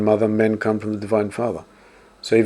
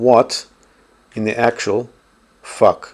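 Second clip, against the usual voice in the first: very slow, deliberate, halting, word-by-word delivery. Reacting to dating advice on YouTube, saying this very slowly. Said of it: "I want to say this very slowly".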